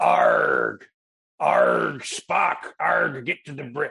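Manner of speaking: loud, very slow, rough, rasping pirate drawl. Retelling an audition where every impression was done as a pirate: retelling a pirate voice. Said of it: "I'm doing them all as pirates".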